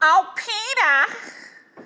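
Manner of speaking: very high-pitched cartoonish housewife voice. Asked to try Lois, doing a Lois voice. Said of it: "You could try Lois".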